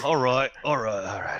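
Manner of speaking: put-on thick British accent, very high, shrill, very loud. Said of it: "went back to being British there".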